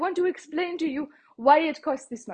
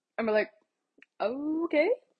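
normal talking voice

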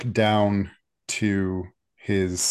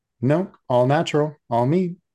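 bashful, sheepish, caught-out, pitched-up tone; 7 semitones higher, 3 dB louder than usual. Game master voicing a character answering the players, sheepish. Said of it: "with a sheepish grin".

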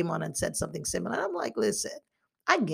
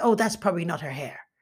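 mock flippant, dismissive put-on tone. Retelling a remark from someone who knew the speaker when younger, mock-flippant. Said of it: "she said something so flippant".

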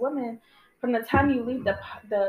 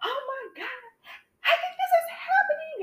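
play-acted, very high, tearful crying voice. Retelling a phone call to a woman for help, retelling crying on the phone. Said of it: "And I'm crying".

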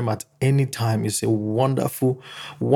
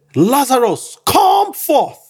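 very high, loud shout with swoops; 13 semitones higher, 7 dB louder than usual. Retelling the bible story, quoting him calling lazarus out, retelling a loud shout. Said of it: "with a loud shout".

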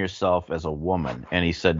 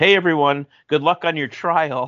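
very high, shrill yell; 10 semitones higher, 4 dB louder than usual. Retelling a yell into a room of nervous waiting people: imitating Connor yelling. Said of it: "he yells into the room".

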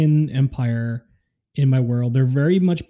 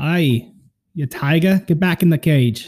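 badly faked, put-on Boston accent; 3 semitones higher than usual. Joking that taiga sounds like tiger, in a bad put-on Boston accent. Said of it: "you're like with a Boston accent. ... I don't even know if that's Boston accent. That's so bad".

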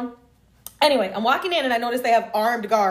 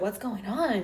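soft, hushed, secretive half-whisper; 8 dB quieter than usual. Retelling asking the receipt checker what was happening: retelling own half-whisper. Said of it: "whispering to her".

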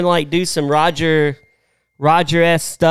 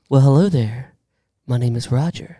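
put-on smooth radio voice, pitched lower; 4 semitones lower than usual. Wishing to be as smooth as him, introduce yourself as Roger in a smooth Roger impression. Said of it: "I wish I could be as smooth as Roger".

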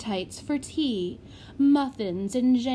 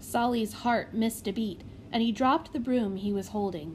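ordinary delivery, nothing marked

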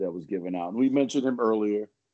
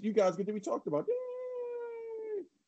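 very high, soft, bouncy, swooping puppet voice, stretched; 7 dB quieter than usual. Turning to the other shows, the host speaks in a Kermit the Frog voice. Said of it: "In my Kermit the Frog voice".

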